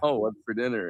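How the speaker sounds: put-on flirty tone. Retelling a movie scene where a character asks about dinner: imitating a flirty tone. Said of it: "She's being flirty about it".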